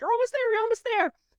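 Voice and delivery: very high-pitched screaming, rattled off fast. Recapping a show scene as a character is helped, imitating Dustin screaming. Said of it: "Dustin's screaming like".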